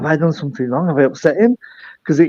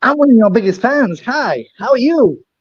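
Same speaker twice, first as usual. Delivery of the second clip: put-on American accent, pitched up; 6 semitones higher than usual. Greeting a returning donor on the line, put-on american accent. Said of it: "That was my best American accent".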